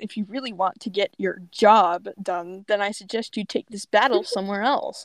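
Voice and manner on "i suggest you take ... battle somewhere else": ordinary talk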